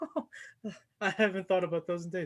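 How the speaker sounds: bright, jovial good humour. Narrator voices Nathalie as she walks in: cheerful, jovial Nathalie. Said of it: "a very more cheerful, jovial Nathalie".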